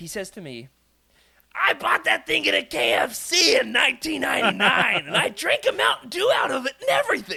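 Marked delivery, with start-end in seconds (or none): 1.5-7.4 very high, shrill, loud put-on shopkeeper voice. Recounting a conversation, quoting what the man said in the speaker's best impression of him. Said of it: "this is my best impression".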